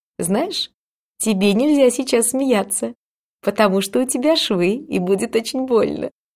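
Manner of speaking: teasing and snide. A visiting mother adds a remark to the narrator with stitches, with a snide smirk. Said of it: "с ехидной ухмылочкой добавила".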